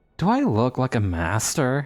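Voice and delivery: words hissed out between teeth, swooping pitch. Narrator voicing a spy master's retort about his title, hissing. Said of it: "He hisses".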